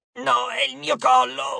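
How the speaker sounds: strangled, choked, rasping voice, high and rough. A narrator reads Geras replying to the shrieking arai, in a choked voice. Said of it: "replicò Geras con voce strozzata".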